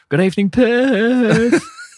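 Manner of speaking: very high, loud, drawn-out showman's screech. Imitating a performer greeting the Perth audience: imitating someone screaming.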